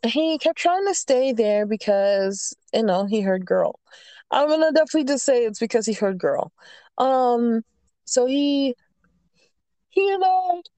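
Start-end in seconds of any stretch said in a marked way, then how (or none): 7.0-10.6 yawning, much slower. Telling a story about a gaming group, apologizing mid-yawn; yawning. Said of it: "sorry, yawning".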